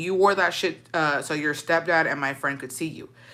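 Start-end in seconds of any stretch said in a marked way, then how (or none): none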